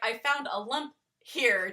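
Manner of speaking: plain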